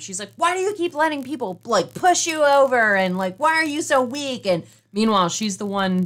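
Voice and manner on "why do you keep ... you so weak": put-on berating, scolding shout, yelling. Recapping how Sarah Silverman yells at Ned, retelling Sarah Silverman yelling. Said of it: "Sarah Silverman is yelling at Ned the entire time".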